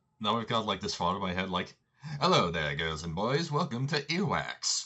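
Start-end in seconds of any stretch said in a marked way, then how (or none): 2.2-4.9 put-on big, slow, old-timey showman announcer voice. Picturing an intro for a party game, in an old-timey announcer voice. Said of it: "The old-timey announcer guy".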